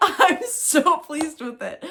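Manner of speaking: very loud, very high speech with laughter breaking through. Showing her cardigan on camera as her dog appears: laughing while speaking. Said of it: "I'm so sorry for laughing".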